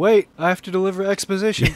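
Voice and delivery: high, loud, shrieked, blurting scream. Mocking a movie scene where a character arrives to deliver exposition, mock screaming. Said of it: "shows up and screams".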